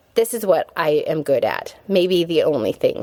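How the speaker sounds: ordinary delivery, nothing marked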